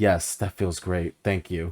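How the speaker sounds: regal, stately, lordly royal voice. Imitating a corgi king character thanking for belly rubs: royal voice. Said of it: "in his most, like, royal voices going".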